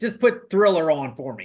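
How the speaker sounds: ordinary talk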